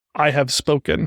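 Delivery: ordinary talk, nothing marked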